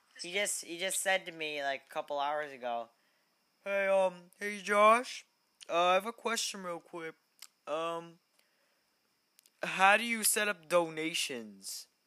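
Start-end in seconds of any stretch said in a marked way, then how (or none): 3.7-11.9 put-on casual voice, pitched up. Retelling what a friend asked a couple hours ago, imitating David Pento. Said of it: "that's what he sounds like, exact".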